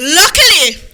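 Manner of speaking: ordinary delivery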